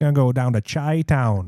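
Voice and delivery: Midwest accent through the nose. Joking about leaning into a Midwest accent, nasal Midwest accent. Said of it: "You gotta say it like through the nose".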